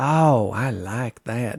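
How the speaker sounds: slow, slight Southern country twang. Retelling what gallery visitors said: imitating a slight Utah Southern country accent. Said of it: "slightly kind of Utah, maybe even, like, uh, Southern accent".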